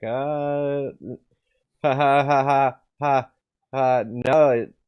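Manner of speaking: mock, high, loud, very slow nervous laugh, uh stretched. Retelling a documentary interview moment: imitating Peter Todd's nervous laugh. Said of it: "a nervous laugh, and he was like".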